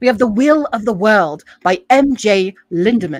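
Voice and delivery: loud fake British accent with announcing delivery. Reading out a book title from a spun wheel: put-on british accent. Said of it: "we're finally in a British accent".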